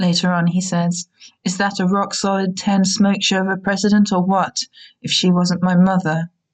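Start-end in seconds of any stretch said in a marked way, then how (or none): none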